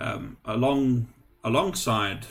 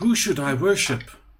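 put-on conflicted voice, higher and louder; 7 semitones higher, 7 dB louder than usual. Voicing the acolyte Odium, torn between two gods: Odium voice. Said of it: "And he says".

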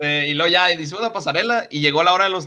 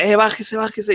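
high, rowdy, jeering crowd shouts, acted out; 6 semitones higher than usual. Retelling how the audience heckled after the first joke: imitating a crowd yelling. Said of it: "no dejaban de aplaudir y gritar".

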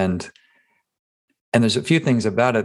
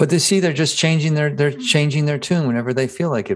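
high, sarcastic, mock-skeptical voice. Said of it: "That's, that's sarcasm".

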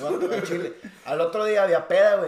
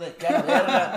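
normal talking voice

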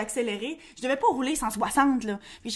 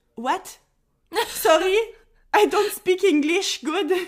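put-on broken English, higher and louder; 7 semitones higher, 6 dB louder than usual. Retelling being stopped and questioned in English, answering while faking poor English. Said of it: "faire semblant que je parlais pas anglais".

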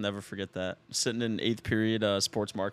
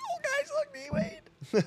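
put-on middle school kid voice, much higher. A speaker retells spotting D-Wade's comment as a kid, in a middle school kid voice. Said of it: "In your middle school voice?".

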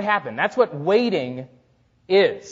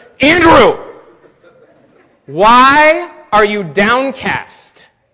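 very loud, severe, stern scolding with long "why"; 4 semitones higher, 9 dB louder than usual. Catching himself sliding into self-pity, he retells a severe self-rebuke. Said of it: "You've got to be severe with yourself".

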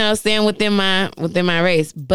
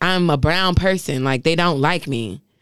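plain

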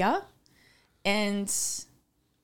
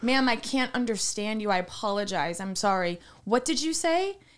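ordinary delivery

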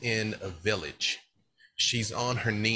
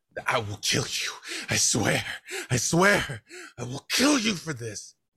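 wild, bestial, furious screaming, loud and rising; 5 semitones higher, 5 dB louder than usual. Voicing Savra kneeling by a burning house, screaming in rage.

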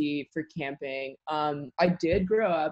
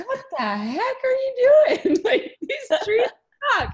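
very high, loud, shrill scream, swooping and climbing; 6 dB louder than usual. Retelling how the tree boss reacted to bad planting: imitating Justin screaming. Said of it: "Justin screaming".

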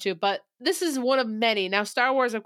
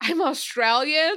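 near-shocked tone, pitched higher; 6 semitones higher than usual. Retelling Margot Robbie answering Ryan Gosling's remark about Americans: mock-shocked Margot Robbie. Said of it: "like almost shocked that she has to say that".

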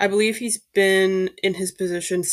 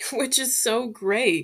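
thick, heavy, mocking sarcasm; 4 semitones higher than usual. Giving a sports news update on an unsigned sport director, heavily sarcastic. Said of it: "that was said with a lot of sarcasm in my voice".

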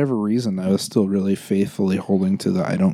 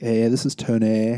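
put-on valley girl accent; 2 semitones higher than usual. Doing a minute on Tony, imitating Tony's Valley girl accent. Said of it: "a Valley girl accent".

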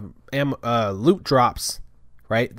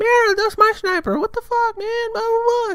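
put-on very high-pitched childlike little kid voice. Retelling what a kid-sounding player said on the mics: imitating a high-pitched kid. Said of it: "Like really high pitch".

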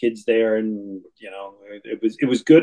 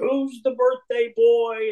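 mock big, loud, high, performative crowd-pleaser call; 12 semitones higher than usual. Telling a birthday party story, the speaker imitates a man getting loud and performative. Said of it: "he gets real loud and performative".

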